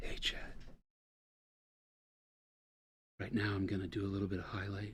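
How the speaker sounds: quiet, breathy ASMR-style whispering. Joking about making an ASMR video of the painting: breathy ASMR whisper. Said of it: "Do some whispering".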